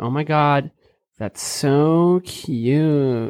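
exaggerated California valley girl accent, drawn-out so. Describing the California Valley accent to the others in the group, in a Valley girl accent. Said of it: "The California Valley accent".

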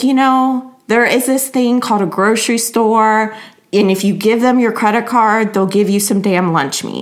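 full passive-aggressive mode.

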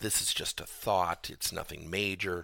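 ordinary talk, nothing marked

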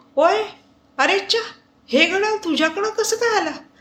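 astonished. Akshay spots the watch on Gurubhaksh's wrist and asks, surprised. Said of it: "आश्चर्याने विचारतो".

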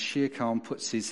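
ordinary delivery

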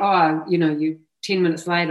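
ordinary talk, nothing marked

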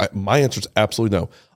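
absolutely stressed, fast and firm, emphatic. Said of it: "Clearly, like".

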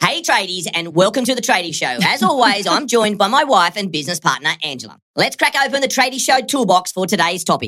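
high, rushed, hyped-up cartoon chipmunk voice. Opening the trading show after a coffee, the host sounds like a cartoon chipmunk. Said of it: "you sound like that cartoon chipmunk".

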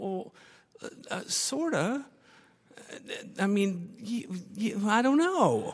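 mock high, slow, nervous stop-start stammer. Retelling the speaker's own answer to her question, acting out nervous stammering. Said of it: "I'm kind of nervously saying".

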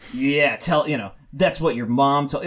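plain

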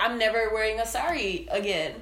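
plain

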